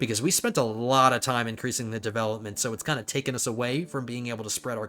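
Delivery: ordinary delivery, nothing marked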